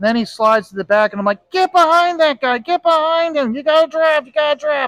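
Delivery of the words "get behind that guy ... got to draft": urgent high-pitched screaming. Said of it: "I was yelling and screaming at the T V".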